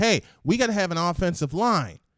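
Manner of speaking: usual speaking voice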